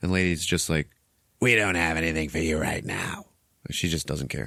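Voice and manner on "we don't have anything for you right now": put-on scratchy-voiced woman's voice. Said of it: "scratchy voice lady".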